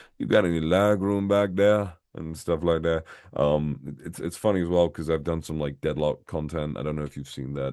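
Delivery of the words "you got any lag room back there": Cajun Southern accent. Recalling a character he voiced, Nicodine Savoy Cajun voice. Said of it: "the the Cajun Southerner type thing".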